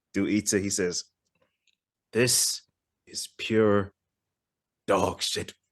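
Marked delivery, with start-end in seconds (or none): 2.1-5.5 slow, halting, each word sounded out, broken apart. Retelling a line from a film scene: imitating slow sounded-out delivery. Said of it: "he sounds it out slow".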